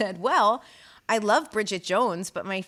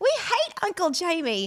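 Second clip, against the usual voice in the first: put-on children's voices, higher; 10 semitones higher than usual. Retelling doing an impression at a party: imitating the children in Love Actually. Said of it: "I pretended to be the children in Love Actually".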